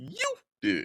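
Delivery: high-pitched, small squeaky voice. Speaker answering their own question about self-doubt, in a high-pitched voice. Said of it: "I had to give the the the high pitched voice for that".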